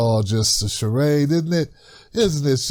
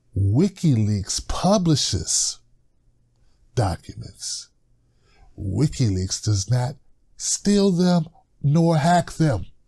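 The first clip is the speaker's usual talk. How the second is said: spelled out very slowly and deliberately. Speaker wants everybody to finally get it, saying it real slow. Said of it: "I want to say this real slow".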